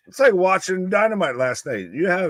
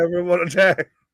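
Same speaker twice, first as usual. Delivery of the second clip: usual speaking voice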